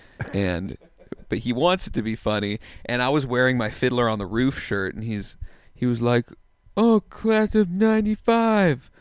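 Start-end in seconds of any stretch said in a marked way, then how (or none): 6.8-8.8 loud, very high, drawn-out teasing comic voice. Retelling what a comedian said when they ran into him: imitating Michael's voice. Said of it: "the voice I'm doing, that is an accurate voice".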